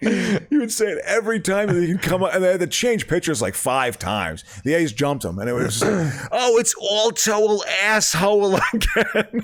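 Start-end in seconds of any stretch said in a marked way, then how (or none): 6.3-9.4 put-on thick, high, very slow, drawn-out Baltimore accent. Retelling what a guy at an A's-Orioles game kept saying, Baltimore accent. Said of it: "this total like Baltimore accent".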